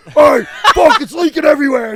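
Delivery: very loud, high, frantic freak-out yell. Retelling a friend spilling beer while tapping a keg: imitating Hogan freaking out. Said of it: "He's freaking out".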